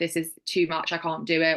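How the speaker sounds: ordinary talk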